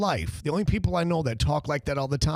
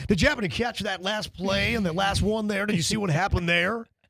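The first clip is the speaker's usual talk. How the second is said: smooth, polished on-air radio voice, very clear; 3 semitones higher than usual. Retelling what a friend says while watching games: imitating Kevin's radio voice. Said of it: "He's got radio voice".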